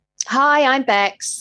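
deliberate, intentional presenter-style announcer delivery. Restarting a video intro with her co-host, deliberate intro intonation. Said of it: "That's how I want it to sound".

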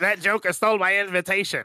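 high nasal voice. Asked for a character voice done through the nose: nasal Waluigi voice. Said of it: "Waluigi. There you go".

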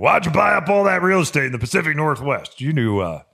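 angry animated character voice. Voicing an imagined question to someone, in a mock-angry cartoon voice. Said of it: "It sounds like I should be on a cartoon".

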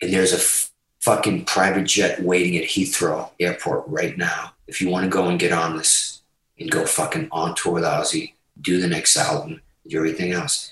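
quiet, hushed, low confidential whisper.

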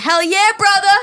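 hollered cheer. Acting out the ride driver's reply to everything: imitating a holler. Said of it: "and I'll holla".

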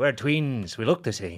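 put-on Irish accent. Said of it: "That's an Irish voice".

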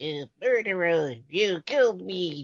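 put-on little child voice. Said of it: "the interesting voice of when they were little".

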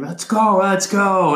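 rallying high yell. Recalling the group yelling during a time trial loop, imitating yelling. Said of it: "so you just hear us yelling".

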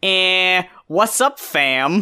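very slow, stretched-out cartoon rabbit voice. Retelling a cartoon scene where Bugs Bunny walks up: Bugs Bunny voice. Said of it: "Bugs comes in and stops him ... He walks up and says".

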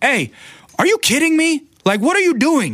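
very high, swooping shout. Retelling how they yelled at a lady walking in front of their camera, retelling a yell. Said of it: "kind of yell over at her like".

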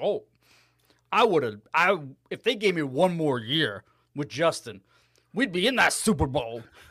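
put-on Louisiana accent. Imitating a coach talking about one more year: Cajun accent imitating Matt Nagy. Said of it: "why he's Cajun all of a sudden".

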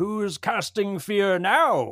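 high, loud, charging warrior's battle cry. A player voicing his character's cry while charging an enemy, shouting. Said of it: "he'll shout like".

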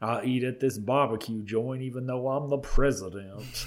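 heavy, put-on North Carolina accent. On the show, playing Thomas Ravenel's cousin who is the president, in a Frank Underwood North Carolina accent. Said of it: "Can I do this accent on the show?".

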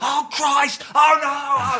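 very high shout at full voice. Describing a Tottenham fan during a match, retelling Steve's shouting. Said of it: "he just shouts at the top of his voice".

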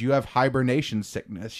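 ordinary talk

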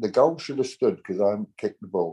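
ordinary talk

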